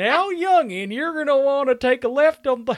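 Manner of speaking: put-on loud, very high old-timer prospector voice. Retelling a funny laugh in an interview: old prospector voice. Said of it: "like an old prospector on his porch".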